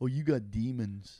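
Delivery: put-on stoner voice. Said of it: "That's a pretty good impression".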